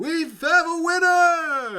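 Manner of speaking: very loud, very slow, very high booming announcer voice. Describing the end of a fight, the speaker voices Mordecai announcing the winner: booming Mordecai voice. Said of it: "he's booming his voice".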